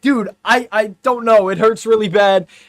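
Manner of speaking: hurting, high, loud screaming cry of pain. Recalling his words to everyone after breaking his leg, retelling a pained scream. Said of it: "I'm in the middle of this foam pit screaming".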